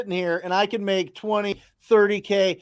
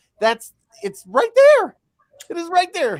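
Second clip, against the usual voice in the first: very high, loud, wildly animated, swooping excitement; 10 semitones higher, 6 dB louder than usual. Speaking to Jamil after listing the tools discussed: voice going high. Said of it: "You see how high my voice is going".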